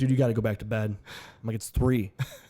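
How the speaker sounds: plain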